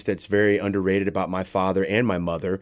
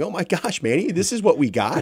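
mock tearful crying, pitched very high; 10 semitones higher than usual. Recounting the parents first seeing the run-down building, voicing the mother: imitating mother crying. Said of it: "while my mother's crying, going".

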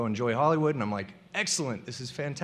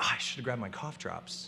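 muttered under breath, much quieter and lower; 2 semitones lower, 8 dB quieter than usual. Retelling what he said to no one in particular while waiting, under his breath. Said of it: "under my breath".

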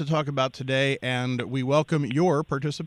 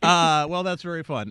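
plain

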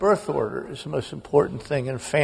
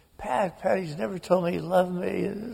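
put-on tearful sobbing, higher and quieter; 5 semitones higher, 4 dB quieter than usual. Retelling a sister's tearful words: imitating a sister sobbing. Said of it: "she is just beside herself".

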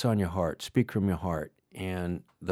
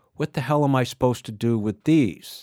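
put-on big, loud, unfiltered voice, pitched high; 5 semitones higher, 6 dB louder than usual. Retelling being handed something for their bags, the speaker repeats their own question in a loud voice. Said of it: "in my loud voice".

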